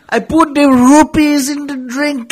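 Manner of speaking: loud, high, bad put-on Indian accent drifting Jamaican. Friends riffing on a Zelda joke; bad Indian-accent Bill Cosby. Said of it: "You sound more Jamaican than anything".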